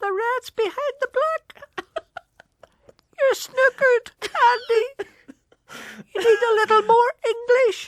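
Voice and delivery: tiny, very high ghost voice. Telling a ghost story, voice the ghost speaking to a man playing snooker: wee ghost voice. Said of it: "Let me do that ghost again".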